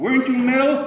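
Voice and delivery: loud angry yell.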